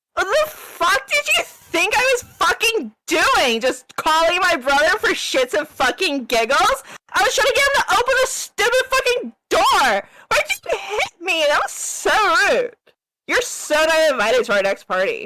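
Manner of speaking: irritated, annoyed rant, very high-pitched and swooping. Voicing a character who was just slapped: annoyed in-character outburst. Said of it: "she just kind of gets annoyed and she's like".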